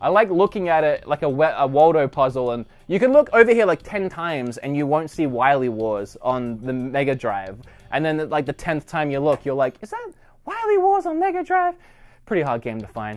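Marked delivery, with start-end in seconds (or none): 9.8-11.8 weird, oddly very high-pitched voice. Describing spotting a rare game on a shelf, voice going really weird. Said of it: "My voice went really weird there".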